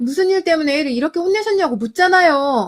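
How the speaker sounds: loud, high, angry shout.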